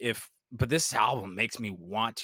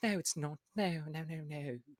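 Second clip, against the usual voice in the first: put-on clumsy British accent, high and slow; 6 semitones higher, 7 dB quieter than usual. Imitating a wife in an argument over music genres: attempted British accent.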